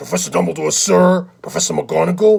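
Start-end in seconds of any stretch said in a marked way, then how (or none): 0.0-1.3 low gravelly put-on voice. Running through Harry Potter character voices, doing the Hagrid voice. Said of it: "Hagrid, I could do the deep voice".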